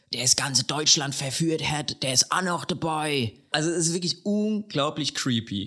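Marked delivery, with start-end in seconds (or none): 0.1-3.3 possessed woman's demon voice in Hessian dialect. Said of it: "dann sagt sie im Dialekt".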